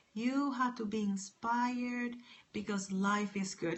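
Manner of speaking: hushed, very soft, quiet and mild. Imagining telling listeners to be inspired, all mild and quiet. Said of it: "be all mild and quiet".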